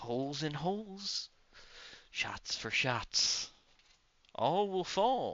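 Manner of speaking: high, cackling monster creature voice. Game master voicing a creature during a fight, cackling creature voice. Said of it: "As this thing cackles".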